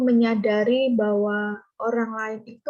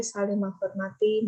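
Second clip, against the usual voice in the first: ordinary delivery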